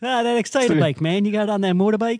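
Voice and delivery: put-on high, loud New England accent. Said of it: "New Englander type thing".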